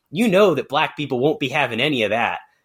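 ordinary delivery

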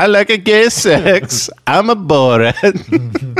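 very high, drawn-out comic voice. Joking with the others after they mention Borat: Borat voice. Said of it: "No, it's Borat".

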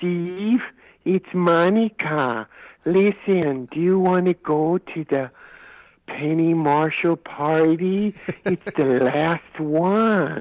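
wispy airhead voice. Retelling a phone call inviting him to a party, the speaker imitates Monica's wispy airhead voice. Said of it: "Monica had this wispy airhead voice".

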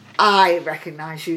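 plain

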